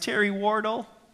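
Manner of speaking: high, trembling, petrified pre-adolescent voice. Narrating being cornered by bullies, answering their question in a high-pitched quivering voice. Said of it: "in a high-pitched, pre-adolescent, quivering voice".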